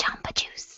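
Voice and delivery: soft, hushed whisper under the breath. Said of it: "Stop whispering".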